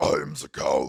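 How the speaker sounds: very low, very deep, very loud, gravelly, booming voice. Recalling a little guy at a frat house, imitating the Count's deep gravelly voice. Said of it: "deep, gravelly voice that would make Batman jealous".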